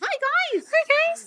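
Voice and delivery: very high, squeaky helium-like voice. Podcast host mimics her own overly upbeat greeting to listeners: helium-balloon Mickey Mouse voice. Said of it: "Like you've just had a little helium balloon".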